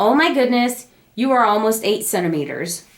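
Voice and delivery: normal talking voice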